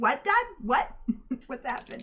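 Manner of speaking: baffled, confused cat voice. Voicing the cat reacting to being called by dad: voicing the confused cat. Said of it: "He's like".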